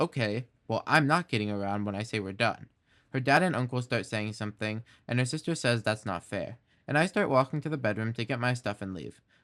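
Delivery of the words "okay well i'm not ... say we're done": usual speaking voice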